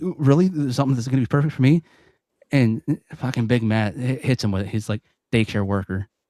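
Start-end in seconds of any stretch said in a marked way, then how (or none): 0.0-1.8 high, rushed, eager, genuinely thrilled, excited disbelief. Retelling a conversation between two men: imitating an excited guy. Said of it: "legitimately excited".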